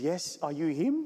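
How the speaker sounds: put-on South African Afrikaans accent. Retelling how Zelda came to meet him, in a very deep Afrikaans accent. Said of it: "in a very deep Afrikaans accent".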